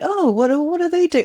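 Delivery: high, curious, nosy, competitive voice.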